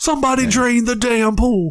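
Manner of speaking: high-pitched ringside announcer call. Acting out how a message was read in one's head, in your best Jim Ross voice. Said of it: "in my best Jim Ross voice".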